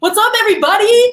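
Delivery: very high, loud, swooping, upbeat hype voice. Explaining how pitch variety makes videos engaging, doing a Russell Brunson rising greeting. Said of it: "And he goes up".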